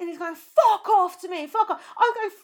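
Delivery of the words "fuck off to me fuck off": angry, screamed shout. Speaker reenacts a man in a packed crowd, retelling a scream. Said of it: "We were screaming".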